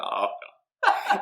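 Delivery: broken voice, cracking very high. Retelling how a man would sound when broken, imitating a cracking voice. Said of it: "his voice like cracks".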